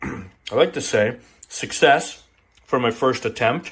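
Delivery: talking while chewing, mouth full. Tasting a first batch they just made, the speaker talks while chewing. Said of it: "sorry to be chewing here".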